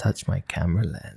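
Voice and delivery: sultry, sexualized, low, hushed seductive narrator-style murmur. Two hosts joking about a show's announcer voice, doing sexualized Big Brother voice. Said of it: "Big Brother's sexualized voice".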